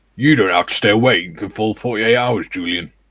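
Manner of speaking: loud, parade-ground style delivery. Reading a viewer's message aloud in a voice: Battery Sergeant Major Williams voice. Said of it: "Sounded a bit, bit like Battery Sergeant Major Williams there".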